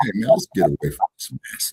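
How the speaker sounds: whispered voice. Retelling what Jesse said about escaping the plantation: imitating a whisper. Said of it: "Jesse whispers to me".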